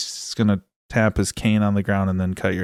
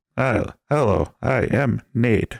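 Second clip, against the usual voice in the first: robotic computer voice, higher pitched; 2 semitones higher than usual. Podcast host introducing himself to listeners, in an automated robot voice. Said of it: "That really did sound like automated voice".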